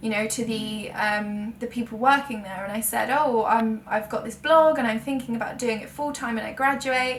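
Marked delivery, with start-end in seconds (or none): none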